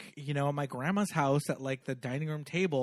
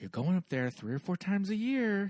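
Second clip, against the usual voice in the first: said quietly under her breath; 5 semitones higher than usual. Retelling a line from a movie scene: imitating muttering under breath. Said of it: "on her breath, she goes".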